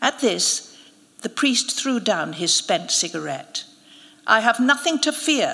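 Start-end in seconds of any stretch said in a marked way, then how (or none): 4.3-5.5 declaiming, higher and louder. The priest throws down his cigarette and answers the narrator, announcing. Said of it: "he announced".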